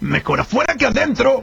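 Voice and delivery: rough, creaky voice like a big ogre. While others argue whether it's Shrek or Alf, Shrek impression. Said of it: "No es Shrek".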